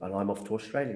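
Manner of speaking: usual speaking voice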